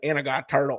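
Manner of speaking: put-on mumble, slow yet fast. Retelling what a neighbor doing demolition said: Boomhauer voice. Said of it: "he was so slow, but so fast".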